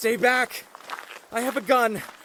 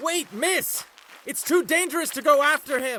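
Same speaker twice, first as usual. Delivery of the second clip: urgent, raised voice calling out; 3 semitones higher than usual. Warning a woman not to chase after a fleeing man, shouting.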